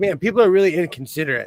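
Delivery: ordinary talk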